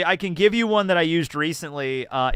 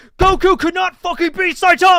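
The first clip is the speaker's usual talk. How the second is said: furious, very high, very loud, shrill angry yell; 8 dB louder than usual. Imitating fans who take power scaling too seriously: imitating someone yelling angrily. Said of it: "calm down".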